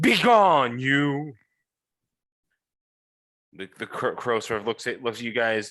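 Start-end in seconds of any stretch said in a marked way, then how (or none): 0.0-1.3 big, loud, booming, thundering voice. Narrating, the speaker voices the Martians calling out: big booming thundering voice. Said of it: "big booming voice thundering".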